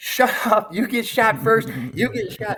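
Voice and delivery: very high, loud, shouted scream. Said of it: "and I'm screaming".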